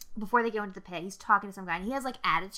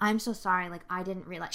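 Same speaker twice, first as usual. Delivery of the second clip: put-on pleading, apologetic tone. Retelling a princess on her knees: imitating a pleading apology. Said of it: "on her fucking knees".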